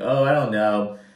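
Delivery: plain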